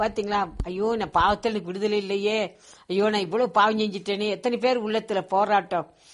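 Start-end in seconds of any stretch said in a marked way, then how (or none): none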